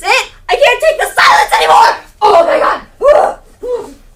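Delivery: very loud, worked-up, rising frantic outburst. In a skit, a woman bursts out until someone tells her to calm down, agitated outburst. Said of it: "please calm down".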